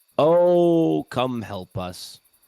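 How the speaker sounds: loud, high shout with long drawn-out "oh". In a story game, calling for help through a door, calling out very loudly. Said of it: "I just said it very loudly".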